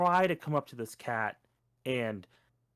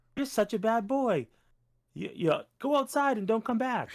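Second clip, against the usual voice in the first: bright, loving, cheerful, pitched-up happy tone; 9 semitones higher than usual. Showing how a harsh line sounds to a dog when said happy: imitating a happy tone.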